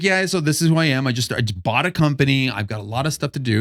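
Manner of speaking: ordinary delivery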